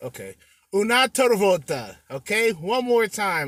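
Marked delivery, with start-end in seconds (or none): 0.7-2.0 loud Italian spoken with a Russian accent. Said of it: "That sounds Russian".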